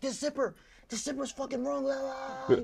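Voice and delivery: very high shrieked scream. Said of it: "he scream".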